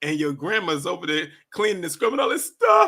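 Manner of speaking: fast, rushed speech with voice cracking. Retelling what a man said, imitating a cracking voice. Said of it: "how his voice cracked when he said".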